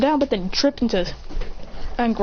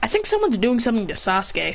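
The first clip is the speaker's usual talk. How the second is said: plain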